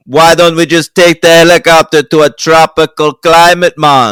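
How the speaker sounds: put-on loud Jamaican accent. Imitating a movie character suggesting a helicopter trip: [name]'s Jamaican accent. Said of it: "What an incredible Jamaican accent".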